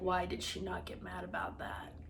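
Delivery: whispered, puzzled, baffled aside.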